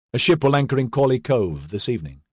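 ordinary delivery

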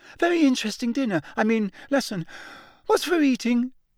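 gabbling in an unnaturally, very high voice. A student keeps talking to his classmates; unnaturally high voice. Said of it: "in the same unnaturally high voice".

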